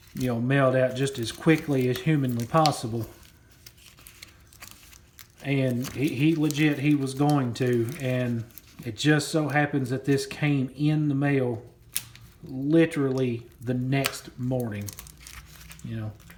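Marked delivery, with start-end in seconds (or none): 0.1-3.1 fast, rattled-off, panicky freak-out. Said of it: "He starts freaking out".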